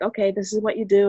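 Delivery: normal talking voice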